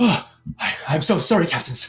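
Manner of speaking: panicked voice. Game narrator voicing a woman reacting to disrespect of her captains, panicked. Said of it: "You can sense panic in her voice".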